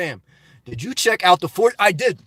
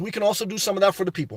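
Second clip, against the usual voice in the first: fast, heated, passionate rant. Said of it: "I love it when you start talking fast".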